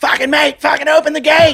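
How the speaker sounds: very high, shrill, desperate yelling scream. Retelling a crush in a tunnel, the speaker acts out his australian friend: retelling a yell. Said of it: "I'm fucking yelling at him".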